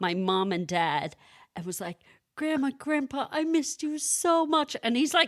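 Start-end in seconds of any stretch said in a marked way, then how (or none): 2.3-4.8 put-on high, tearful, sobbing little boy's cry. Retelling a child's words as he hugs his grandparents: imitating a crying child.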